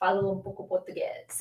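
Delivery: European Portuguese accent, not Brazilian. Answering viewers in Brazil with a line of Portuguese: European Portuguese accent. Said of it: "doing that with a Portuguese accent, not a Brazilian one".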